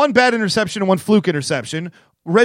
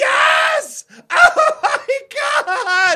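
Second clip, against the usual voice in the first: very high, very slow, drawn-out celebratory shriek. Retelling watching the winning spike at home, retelling screaming like a little girl. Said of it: "I just started screaming like a little girl".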